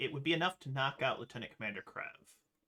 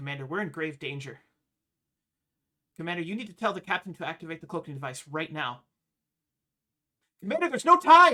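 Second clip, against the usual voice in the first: very loud, panicked, freaking-out outburst; 4 semitones higher, 12 dB louder than usual. A patient on a table urges the commander: panicking. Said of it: "calm down".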